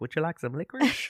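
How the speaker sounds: grandma voice, pitched high. Retelling a character's line at a funeral: grandma voice. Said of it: "She does a grandma thing".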